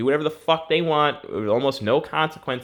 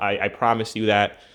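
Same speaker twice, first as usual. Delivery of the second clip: usual speaking voice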